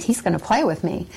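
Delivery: ordinary talk, nothing marked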